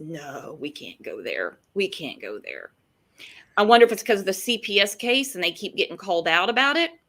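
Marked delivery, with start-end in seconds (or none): 0.0-2.7 amused, dismissive tone with a sarcastic chuckle. Retelling how he dismissed the question: imitating a chuckling dismissal. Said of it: "he chuckles and goes".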